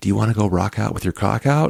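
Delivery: close-to-the-ear, hushed stage whisper. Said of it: "leans in and whispers into my ear".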